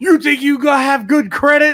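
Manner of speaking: very high, shrill, loud screaming tough-guy voice. Retelling a video of New Jack screaming at a kid: imitating New Jack screaming. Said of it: "New Jack screaming at this kid saying".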